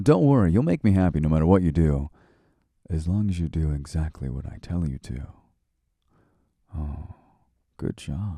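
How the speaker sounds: bossy, commanding, dominant tone. Praising the listener while giving orders: dominant tone. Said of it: "you see that dom energy?".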